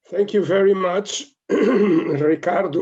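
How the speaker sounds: loud, strained, struggling voice with throat clearing.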